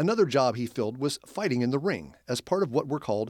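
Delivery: ordinary delivery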